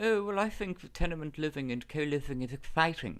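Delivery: whiny, lisping, high voice. Explaining how to do impressions, example of Owen Murphy: Owen Murphy impression, lisp and whine. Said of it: "Murphy has a lisp, but he also has a whine in his voice".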